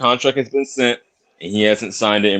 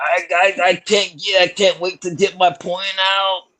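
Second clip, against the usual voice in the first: put-on breathless yelling, high, very slow, drawn out; 7 semitones higher than usual. Imitating another speaker who is always yelling: imitating HLD yelling out of breath. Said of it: "'Cause you're always fucking yelling".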